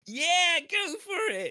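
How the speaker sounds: mock very high, slow, drawn-out yelled scream. Retelling what a friend screamed out at a live show: imitating a friend screaming. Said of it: "he screamed out".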